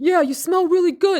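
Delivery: put-on high, booming, loud New Jersey gangster accent. Retelling what a man behind the speaker yelled out, in a New Jersey gangster accent. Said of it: "New Jersey like type of uh, gangster accent".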